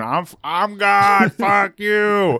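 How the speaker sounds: mock very slow, high, stretched-out, drawn-out scream. Retelling what Mike shouted at the police spotlight: imitating Mike screaming. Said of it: "he's screaming".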